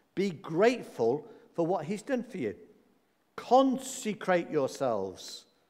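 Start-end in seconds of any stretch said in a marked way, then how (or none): none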